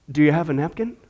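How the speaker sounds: quiet, gentle, hushed, soft-spoken voice. Telling a joke, an old man asks something at the window: asking quietly. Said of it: "he just quietly asks".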